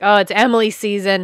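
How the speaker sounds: ordinary talk, nothing marked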